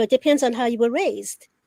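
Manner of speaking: plain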